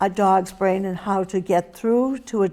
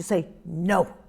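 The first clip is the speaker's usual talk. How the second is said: sharp, lower, quieter, stern commanding tone; 2 semitones lower, 4 dB quieter than usual. Teaching how to speak to a dog, the speaker demonstrates a sharp, lower command tone. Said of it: "the most important part of that tone is that it's sharp".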